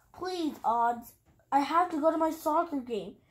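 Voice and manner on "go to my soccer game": plain reading voice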